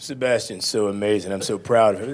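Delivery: ordinary talk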